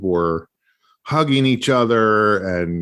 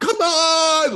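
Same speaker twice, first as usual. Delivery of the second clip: mock loud shout, much higher in pitch. Speaker retells a guy screaming at the game, imitating a loud shout. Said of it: "Like so loud that both of us".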